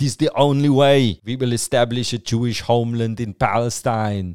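put-on Austrian accent in English. Quoting the organizer of the first Zionist conference, in an Arnie accent. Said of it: "This is the only Austrian accent I know".

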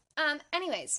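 normal talking voice

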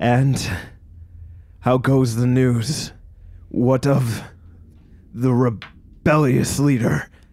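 slow, forced, growling villain voice. The game master voices the king greeting the approaching party, growling villain king. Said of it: "the king gestures out towards you. / And upon its throne sits [name], / He growls out".

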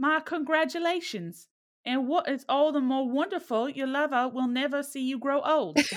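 put-on American Southern accent. A self-described character actor delivers a line in a scene: Southern accent. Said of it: "I don't know why I got Southern".

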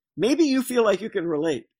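said with an audible smile. Speaking to listeners about Paul's letters written in jail: said with a smile. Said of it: "I say that with a smile".

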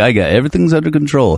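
full macho, swaggering airline captain voice. Explaining how people want their pilot to sound, super macho. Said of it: "that like super macho".

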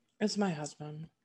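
soft, disdainful voice. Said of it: "did you like the disdain in my voice?".

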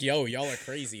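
normal talking voice

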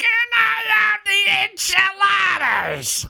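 very high, slow, creaky, drawn-out whine. Ordering at a Mexican restaurant, as the scene asks: Gilbert Gottfried impression. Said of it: "Can I show you my Gilbert Gottfried?".

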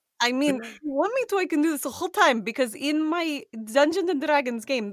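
put-on Eastern European accent. Player keeping up a Dungeons and Dragons character's voice the whole time, Eastern European accent. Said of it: "I'm just going to do Eastern European accent the entire time".

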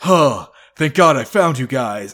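loud, winded, huffing and panting between words. Acting out Torres reaching the partners outside the building, acting out Torres panting. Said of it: "starts panting and clutching his knees".

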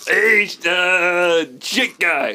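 slow, heavy New York accent with drawn-out "uh". Trying Carl's line to Shake: Carl with New York accent. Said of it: "he's kind of got the New York accent".

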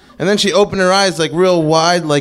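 plain

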